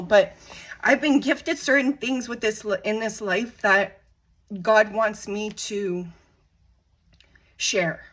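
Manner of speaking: emotional voice, halting, words and phrases breaking up. Speaking personally, the speaker admits being emotional. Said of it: "I'm getting emotional".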